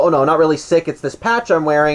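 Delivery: ordinary delivery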